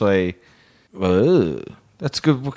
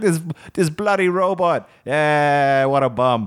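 attempted Italian accent; 4 semitones higher than usual. Voicing imagined people waiting for their car, in an attempted Italian accent. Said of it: "I don't know why I went Italian".

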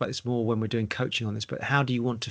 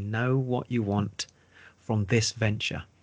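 very slow delivery, much slower. Giving a point to an audience writing it down, saying it really slowly. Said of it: "I'm going to say that really slowly".

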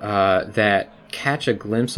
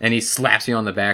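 ordinary delivery

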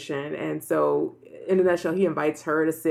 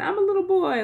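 mock very high, tearful small-child wail. Retelling how the little boy kept crying in the episode: imitating Mario crying. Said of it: "he kept crying, like, in a, in Italian".

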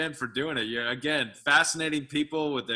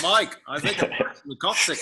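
slow, put-on Australian accent; 4 semitones higher, 4 dB louder than usual. Acting out a parachuter calling Mike from the sky: put-on Australian accent. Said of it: "in his, uh, Australian accent".

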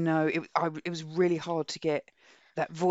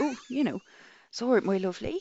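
Somerset accent, pitched higher; 6 semitones higher than usual. Showing Annette how the hobbits speak in your head when reading, in a Somerset accent. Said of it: "they've got a Somerset accent".

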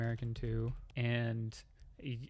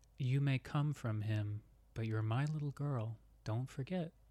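small, eerie, creepy demon voice. Narrating a scene, the speaker voices the listener's demon as a little voice in the ear. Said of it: "you hear a little voice in your ear".

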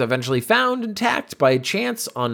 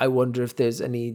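put-on German accent; 3 semitones lower, 4 dB quieter than usual. Imagining a German child hearing about the found statue, in a mock German accent. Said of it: "imagine being like a German child".

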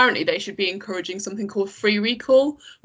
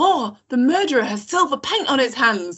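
put-on excitement, higher pitched; 4 semitones higher than usual. Retelling what one of two girls said, imitating someone excited. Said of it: "One of them goes excitedly".

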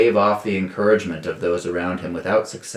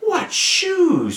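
very high, sudden, exclaimed outburst. A character points at a man's feet under the tavern table, exclaimed. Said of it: "Ruby exclaimed".

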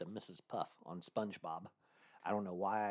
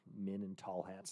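put-on disgusted, scornful tone; 4 dB quieter than usual. Speaker retells how a woman said it, mimicking a disgusted tone. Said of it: "she said it with such disgust".

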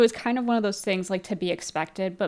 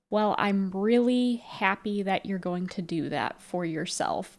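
mock very distant, remote, detached tone. Retelling what a game character says back: imitating a very distant tone. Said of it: "a very distant".

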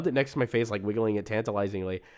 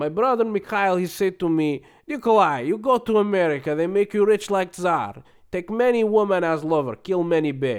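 raised, louder fake Russian accent. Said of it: "I'm gonna do it in an accent".

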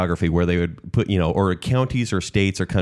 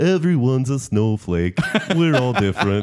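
stuffy, congested head-cold voice; 4 semitones higher than usual. Imitating lines Barney had in his songs: Barney voice. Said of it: "try to sound like we have a cold".

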